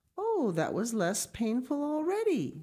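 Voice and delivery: joyful, delighted, high voice with swooping pitch. Narrator voicing Clara as she tries stepping on the ground, exclaiming joyfully. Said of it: "she exclaimed joyfully".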